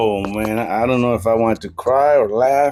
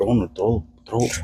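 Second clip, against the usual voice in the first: urging, begging, pleading tone; 3 dB quieter than usual. Retelling the coaches in the corner: imitating coaches begging. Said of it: "in his corner beg him".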